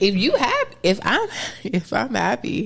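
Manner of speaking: high, swooping voice, shooting up unexpectedly. Speaker explaining being open about feelings, voice going high. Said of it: "I don't know why my voice got so high".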